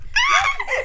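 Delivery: high-pitched mock shriek.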